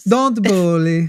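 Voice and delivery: acted feminine voice. Trying out a Melania impression on air: Melania impression. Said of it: "I'm trying to sound like her".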